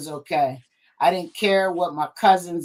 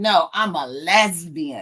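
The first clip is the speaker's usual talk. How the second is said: put-on very drawn-out, slow, sassy delivery with attitude. Retelling answering their mom's question, reenacting a reply said with attitude. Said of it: "And I said it with attitude".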